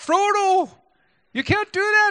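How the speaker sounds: very high, loud Newfie-Scottish accent. Showing the accent used for Samwise Gamgee when reading to the kids, Samwise Gamgee accent. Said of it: "I practice that accent because when I was reading Lord of the Rings to my kids, Samwise Gamgee had that accent".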